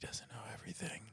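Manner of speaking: hushed, whispered under the breath. Remarking on another character in the scene, said under the breath. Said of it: "I'll say under my breath".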